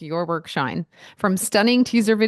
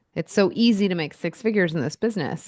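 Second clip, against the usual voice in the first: ordinary talk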